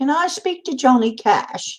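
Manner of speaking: put-on British accent. Pretending to phone the dead and ask for [name], put-on British accent. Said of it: "I don't know why I'm doing the British accent".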